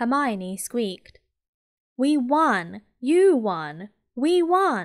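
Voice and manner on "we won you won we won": loud, very slow, drawn-out shouting. A boy thumps his friend on the back after their team wins, shouting. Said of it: "shouted Ron".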